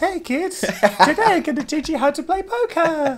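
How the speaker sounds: put-on very high-pitched, annoying little kids' puppet voice. Told he sounds like a kids' TV puppet, speaker plays along: annoying children's TV puppet voice. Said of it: "A little annoying puppet".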